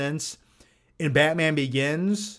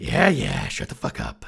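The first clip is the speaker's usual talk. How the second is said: put-on rough, creaky, gruff old-man grumble. Explaining how they feel inside, a Clint Eastwood impression. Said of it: "I feel like Clint Eastwood from Gran Torino".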